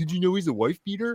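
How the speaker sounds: high, mocking whiny voice.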